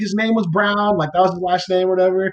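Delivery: high, fast, flustered speech. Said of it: "And she's like".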